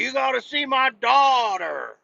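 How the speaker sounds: put-on acted, creaky, very high, rough old-man scream. Retelling a man without a hearing aid showing his daughter's picture, imitating a man screaming. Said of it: "but he is screaming".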